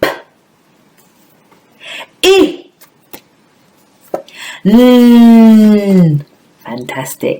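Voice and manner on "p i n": loud, high voice with the N sound drawn out. Leading a class through phonemes: loud voice. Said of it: "Can you do the next phonemes in a loud voice?".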